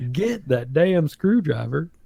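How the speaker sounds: put-on Southern accent. Repeating the zombie's line as a family quote: imitating a zombie's southern accent. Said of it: "in a real Southern accent".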